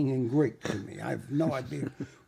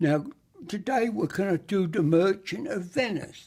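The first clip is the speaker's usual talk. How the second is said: put-on old schoolteacher classroom voice, pitched up, announcing; 5 semitones higher, 3 dB louder than usual. Recalling school English lessons, the speaker does an impression of the English teacher. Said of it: "I used to do an impression of our school teacher".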